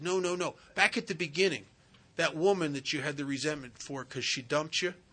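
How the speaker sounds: ordinary talk, nothing marked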